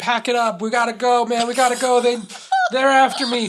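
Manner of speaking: frantic, terrified, panicked screaming. Retelling a film scene where Rocco flees after a shooting: imitating Rocco screaming. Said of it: "he's just screaming".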